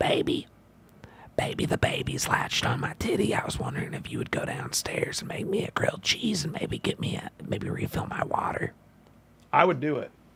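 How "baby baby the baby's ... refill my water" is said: put-on, hoarse, raspy southern whisper. Imitating a partner asking for a grilled cheese: imitating Kat in a raspy whisper. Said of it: "raspy whisper, like a southern".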